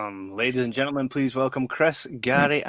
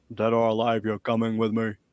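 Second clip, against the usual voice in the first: put-on robotic cop voice. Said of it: "he goes an octave lower and he's like".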